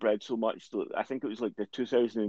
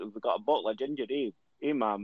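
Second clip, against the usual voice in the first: put-on Dundee Scottish accent impression; 4 dB quieter than usual. Recalling coming back from Dundee and talking to their mum, put-on Dundee accent. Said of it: "I came back talking to my mum like that".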